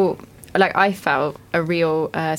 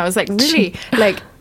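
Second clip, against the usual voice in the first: usual speaking voice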